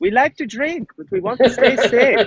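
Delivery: put-on German accent. Joking about a drinking mask with German fans, put-on German accent. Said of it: "I don't even know if that's a German accent".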